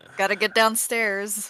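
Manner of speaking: speaking loudly. Voicing a character waking a sleeping companion: loud wake-up call. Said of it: "why are you so loud?".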